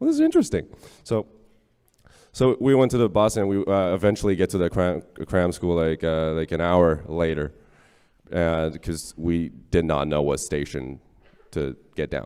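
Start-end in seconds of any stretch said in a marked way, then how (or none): 0.0-0.7 very high, delighted, wondering tone. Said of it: "I'm like".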